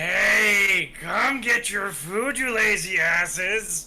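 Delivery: shrill, very high, very loud goblin holler, "hey" drawn out. Asked by the game master for an impersonation, a player answers as a dwarf character speaking Goblin. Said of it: "let me hear your best impersonation, speaking in Goblin".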